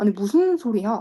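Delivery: plain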